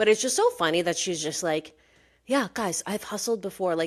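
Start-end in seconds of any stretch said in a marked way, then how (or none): 2.3-3.7 put-on, completely earnest and sincere tone. Imitating Kelsey saying she has hustled before: imitating an earnest tone. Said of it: "she just said it so earnestly".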